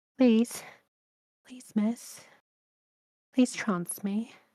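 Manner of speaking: coy, sugary pleading. Demonstrating ways to ask to go into trance, begging coyly, sweetly. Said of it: "Or you could beg, coyly, sweetly".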